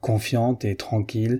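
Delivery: ordinary delivery, nothing marked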